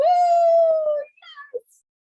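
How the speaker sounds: put-on high, loud giddy little girl squeal. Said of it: "she's so giddy".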